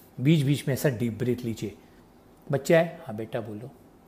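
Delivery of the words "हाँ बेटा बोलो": very soft, hushed, low-pitched small voice. Demonstrating how to answer a child: low volume. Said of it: "आप ये volume रखिए। जैसे आपने ये छोटा वॉल्यूम रखा".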